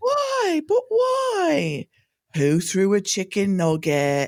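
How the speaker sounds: put-on swooping British accent, "why" stretched out. Showing how the speaker copies Harry: mimicking Harry's British accent. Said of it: "a parrot, a mockingbird".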